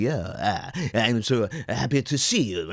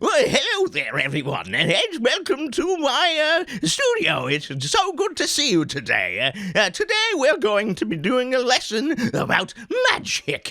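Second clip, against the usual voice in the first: very high, swooping, zany cartoon wizard voice; 13 semitones higher, 3 dB louder than usual. Showing a cartoon wizard welcoming everyone to a magic lesson: crazy wizard voice. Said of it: "That's the crazy wizard".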